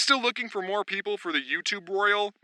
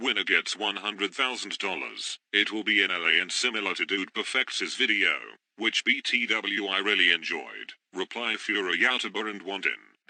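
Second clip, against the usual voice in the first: synthetic text-to-speech style computer voice; 11 semitones lower, 4 dB quieter than usual. Reading out a tweet announcing an airsoft battle royale, in a computer voice. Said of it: "I'm just going to use a computer voice".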